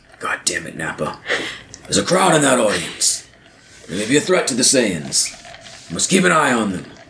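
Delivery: anime-style character voice with big pitch swoops. Voicing a Saiyan in a bit, the speaker does an almost-Vegeta voice. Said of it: "Almost sounds like you're Vegeta".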